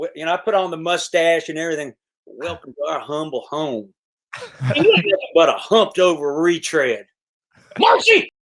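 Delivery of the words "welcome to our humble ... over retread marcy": thick, performed character voice with swooping, swinging pitch. Recounting sitting at home doing the bit, Doyle Hargrave impression. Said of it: "you ever do an impression of Dwight?".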